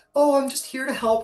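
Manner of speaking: timid, shy, very high little voice. Describing how the character Red acts before combat: slightly timid Red voice. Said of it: "kinda slightly timid".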